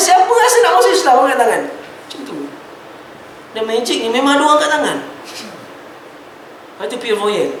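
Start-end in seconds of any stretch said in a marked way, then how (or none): 0.0-1.6 high, loud, bold and daring. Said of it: "Soalan pertama dia".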